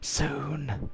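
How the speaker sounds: very hushed, lingering, drawn-out half-whisper. Voicing a character speaking to a mirror, half-whispering. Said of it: "he kind of whispers to it".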